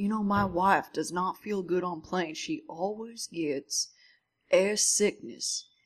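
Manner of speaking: put-on Georgian accent. Retelling what a man on a plane said to a sick passenger: Georgian accent. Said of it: "He had the Georgian accent".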